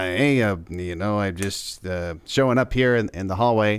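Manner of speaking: low-pitched, listless, low-energy delivery. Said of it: "low, low energy".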